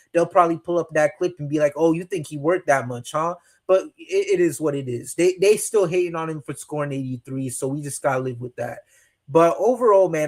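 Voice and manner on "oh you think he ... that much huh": normal talking voice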